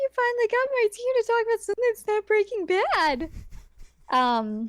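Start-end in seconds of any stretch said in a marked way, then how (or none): 0.0-3.3 very high, cheery, happy anime-style voice. Acting out Chris Redfield's line about the team: happy anime-style Chris Redfield voice. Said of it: "happy anime eyes".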